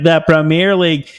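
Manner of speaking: mocking, stupid-sounding put-on American accent. Retelling a liverpool fan mimicking the speaker, in a mocking stupid-sounding american accent. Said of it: "my American accent sounded stupid whenever I said the Premier League".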